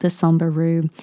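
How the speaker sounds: plain reading voice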